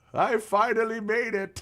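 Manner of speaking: put-on elderly man's voice. Imagining himself at eighty when the Canucks win a cup, old man voice. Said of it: "That's my old voice".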